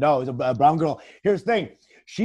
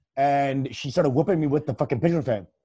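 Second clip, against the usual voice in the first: ordinary delivery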